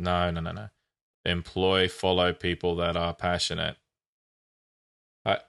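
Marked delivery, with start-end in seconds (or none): 1.3-3.8 mock, fake flat monotone delivery. Offering to show a monotone, then speaking in a mock monotone. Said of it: "I can do a monotone if you want".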